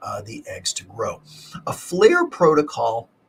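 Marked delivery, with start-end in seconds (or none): 1.7-3.0 loud voice crack breaking upward, high. Explaining IVF medication protocols, the speaker's voice cracks mid-phrase. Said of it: "my voice cracked there".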